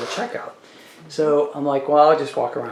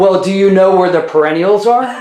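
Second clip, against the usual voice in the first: put-on very loud, high, snippy tone with attitude; 5 semitones higher, 10 dB louder than usual. Retelling her own question to a woman who gave her attitude: mock snippy. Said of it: "Did you say it like that? ... I said it a little bit nicer than that".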